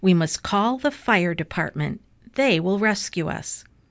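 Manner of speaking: ordinary delivery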